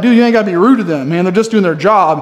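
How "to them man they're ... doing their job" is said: ordinary talk, nothing marked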